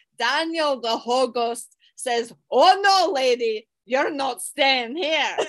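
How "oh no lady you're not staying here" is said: put-on Scottish accent. Retelling a ghost story's plot, voicing Daniel in a Scottish accent. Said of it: "I like how I got Scottish".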